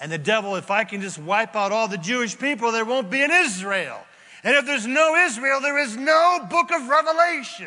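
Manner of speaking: loud, rising, high-pitched building shout. Speaking to listeners, trying to get a point across, yelling. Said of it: "Sorry for the yelling and the shouting".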